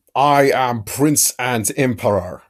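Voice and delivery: slow, put-on imperial Germanic accent. Giving an example of a role-play character's voice when asked, Erdhart's Germanic accent. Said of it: "the Empire of Man is very Germanic".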